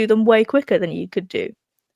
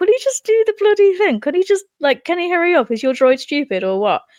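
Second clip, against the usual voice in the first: annoyed, impatient, exasperated, pitched-up griping; 8 semitones higher than usual. Recounting a film scene where the droid struggles with the elevator, imitating frustrated Obi-Wan. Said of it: "he's getting a bit frustrated".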